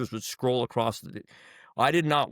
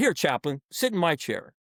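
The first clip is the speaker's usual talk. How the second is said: mock delivery with an edgy, pitched-up insistent voice; 5 semitones higher than usual. Recounting offering a chaplain his chair, the speaker re-enacts it, retelling with an edge. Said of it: "I've got an edge in my voice".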